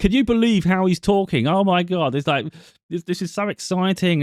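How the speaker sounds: very high, loud, overexcited shouting. Show listeners what hurts their ears and makes them adjust the volume, imitating loud shouting into a microphone. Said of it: "don't have to go so loud".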